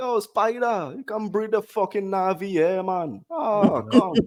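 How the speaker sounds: comic put-on Jamaican accent. Imagining movie characters speaking like Jamaicans: put-on Jamaican accent. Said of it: "they spoke like Jamaicans".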